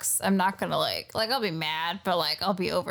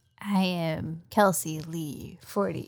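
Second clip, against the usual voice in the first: suddenly solemn, overly serious delivery; 3 semitones lower than usual. A podcast co-host tells listeners where to follow her, suddenly serious. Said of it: "Why'd you get so serious?".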